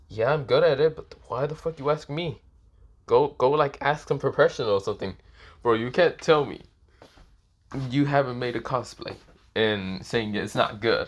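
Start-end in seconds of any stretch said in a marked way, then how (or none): none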